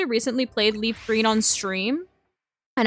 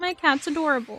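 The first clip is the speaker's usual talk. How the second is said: normal talking voice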